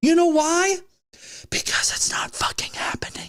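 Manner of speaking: strained scream squeezed into a whisper. Ranting on the show about people who believe in chemtrails, in a quiet suppressed scream. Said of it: "screaming as loud as I could, but in a very quiet tone".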